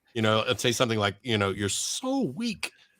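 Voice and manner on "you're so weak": put-on comic character voice, very high and soft. Showing what you say to Arden when you're cooking, do an Uncle Roger imitation. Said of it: "an imitation of Uncle Roger".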